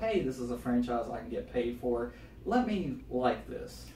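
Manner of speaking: ordinary delivery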